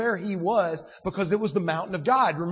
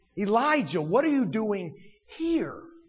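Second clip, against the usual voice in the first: strong stress on the word here. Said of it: "it's the place".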